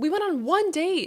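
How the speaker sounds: loud, high, slow, exasperated tone.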